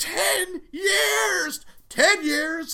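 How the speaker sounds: put-on shrill scream, very high and loud. Imagining their reaction if the listener vanished for ten years, imitating themself screaming. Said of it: "I would just start screaming".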